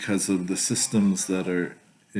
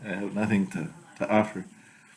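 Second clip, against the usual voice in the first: plain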